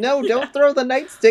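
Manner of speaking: shrill, very loud, high, distressed, upset yelling. Retelling their own upset reaction to a movie scene: retelling being upset. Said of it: "we were so upset when that happened".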